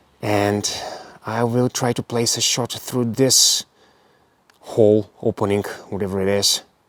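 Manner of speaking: hushed whispering. Trying to place a shot through an opening, whispering. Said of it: "I'm whispering right now".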